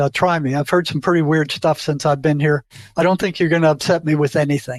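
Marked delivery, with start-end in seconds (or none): none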